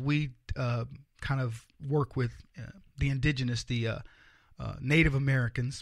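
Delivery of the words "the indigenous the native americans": ordinary talk, nothing marked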